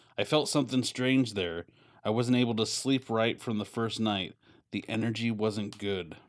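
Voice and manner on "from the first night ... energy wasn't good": ordinary talk, nothing marked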